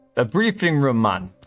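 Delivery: put-on Jamaican accent with a lilt. Commenting over a game demo, voicing a line in a mock jamaican accent. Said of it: "I know that's Jamaican, not African".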